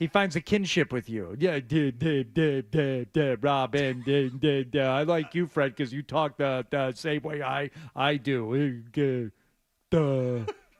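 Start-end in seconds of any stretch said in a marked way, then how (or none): 1.6-10.5 put-on mumbling stutter, slower pace. Show Fred how he talks, doing a mumbling, stuttering Fred imitation. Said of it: "he's a mumbling, stuttering prick ... That's my Fred imitation".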